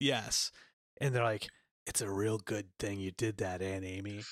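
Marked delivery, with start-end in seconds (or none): 1.9-4.2 low-pitched, hushed superhero voice. Narrating a game scene, speaker voices characters thanking Aunt Amy, Batman voice. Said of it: "Why do they sound like Batman?".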